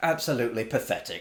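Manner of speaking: ordinary talk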